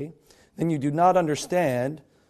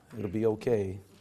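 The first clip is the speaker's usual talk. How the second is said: talking very low. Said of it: "if I talk real low".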